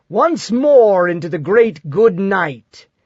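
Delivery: ironic, mocking, theatrical declaiming like a ham actor. Narrator reads Colbert's words as they pull out behind War Pig: mocking stage voice. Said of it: "he says in a mocking stage voice".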